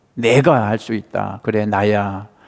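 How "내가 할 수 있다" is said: 내가 strongly stressed, said loud and big. Meditating on a Bible verse, reading it aloud once: stress on 내가. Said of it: "내가 이걸 강조하면서 크게 한번 읽어보는 거죠".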